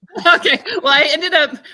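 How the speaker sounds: loud, high-pitched laughing.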